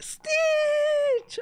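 shouting out while crying.

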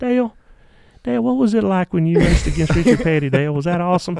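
acted cartoonish voice. Retelling how he once asked a question, in a Family Guy character voice. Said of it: "You sound like a Family Guy character".

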